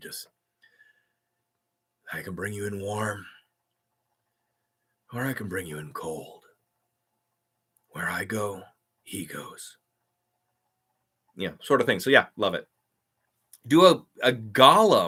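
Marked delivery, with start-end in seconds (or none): 0.0-9.8 sultry, sexy, low, soft bedroom voice. Demonstrating the voice he was told to use, low sexy bedroom voice. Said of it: "think of it as a as a you know a bedroom voice".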